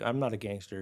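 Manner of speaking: normal talking voice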